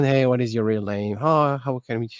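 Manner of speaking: plain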